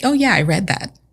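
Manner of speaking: mock breezy, unbothered, offhand nonchalant aside. Retelling how someone admitted reading a journal: imitating a nonchalant tone. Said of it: "he's very nonchalant about it".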